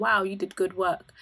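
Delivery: ordinary delivery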